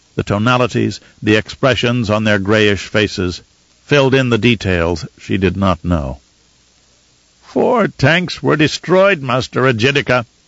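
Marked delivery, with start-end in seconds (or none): 7.5-10.3 whiny, aggrieved, complaining voice. A Tleilaxu man reports losses to Master Ejidika, whining voice. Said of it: "said in a whining voice".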